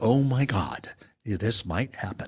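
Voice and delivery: slow, on-air radio announcer voice. Describing a game's promising first half to a co-host, in a radio voice. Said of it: "That's my radio voice".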